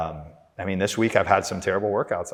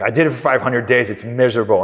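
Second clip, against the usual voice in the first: put-on very loud, laid-back, cool British accent; 3 semitones higher, 9 dB louder than usual. Retelling what a podcaster said about quitting coffee: imitating Chris Williamson's British accent. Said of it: "in his cool British accent".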